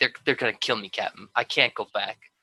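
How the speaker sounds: pleading through tears, crying voice. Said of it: "in tears".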